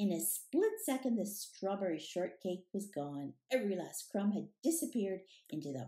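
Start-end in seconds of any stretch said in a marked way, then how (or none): none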